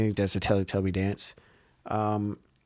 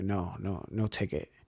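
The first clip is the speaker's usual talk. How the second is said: gentle, soft, slow, measured quiet murmur; 3 semitones lower, 8 dB quieter than usual. Retelling how a man started talking, imitating soft speaking. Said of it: "he like softly speaks".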